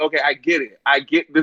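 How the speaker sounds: ordinary delivery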